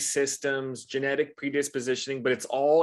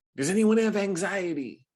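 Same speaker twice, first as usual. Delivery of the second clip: put-on hyped preacher, talking fast, higher; 6 semitones higher than usual. Retelling a church altar call, imitating the pastor: pumped-up pastor talking fast. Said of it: "very pumped up".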